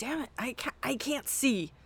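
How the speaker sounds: mock fed-up, frustrated, irritated high-pitched grumble. Retelling fumbling with glasses while crying through an episode: imitating own irritated self. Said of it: "I was getting irritated".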